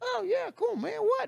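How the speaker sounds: rough, creaky, very high newsboy voice. Retelling how he answered when offered something to listen to in quarantine, in a paper boy voice. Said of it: "I'm a paper boy".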